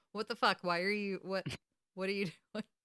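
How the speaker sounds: stammering, caught off guard, stumbling over "what". Retelling a TV scene, imitating Crowley's reaction. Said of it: "without Crowley being like".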